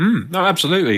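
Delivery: talking with mouth full. Mid-conversation, eating an onion ring while agreeing: talking with mouth full. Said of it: "I have my mouth full because I'm just eating an onion ring".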